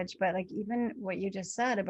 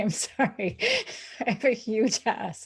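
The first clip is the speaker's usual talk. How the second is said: amused, speaking through laughter, swooping pitch; 2 semitones higher, 5 dB louder than usual. Describing bumping into people, retelling a laughing apology. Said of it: "And I will laugh and say".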